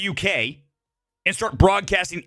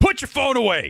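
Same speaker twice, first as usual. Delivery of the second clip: very loud, high, forceful delivery, acted out; 6 semitones higher than usual. Retelling telling someone to put their phone away: very loud and forceful. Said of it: "Like that. Really loud".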